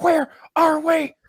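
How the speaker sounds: high, slow, stretched-out scared, lost panic. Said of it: "I'm like".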